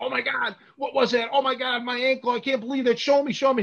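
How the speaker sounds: high, pained yelling and screaming. Retelling being caught in a toe hold: retelling screaming in pain. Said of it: "I was screaming before I hit the ground".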